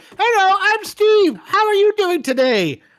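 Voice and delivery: very high, loud, squeaked-out voice. Pretending to make a tumor talk: voice of Steve the tumor. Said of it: "here's what I'd do".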